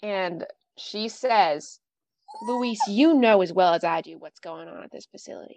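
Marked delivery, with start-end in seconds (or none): 2.4-5.6 voice dropped to a low hush. Retelling what a woman told him, imitating her dropped voice. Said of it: "She drops her voice".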